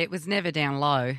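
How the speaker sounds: imitated Australian accent. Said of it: "and then Kelly will repeat it".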